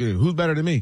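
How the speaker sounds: ordinary talk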